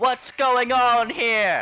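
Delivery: piercing, very high and very loud shout. The game master voices a character who shouts outward, shaking the ground. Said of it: "as she shouts outward".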